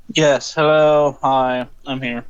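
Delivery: downcast, flat, low-energy, depressed voice. Joining a live call after the host greets her, sounding depressed. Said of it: "You sound depressed".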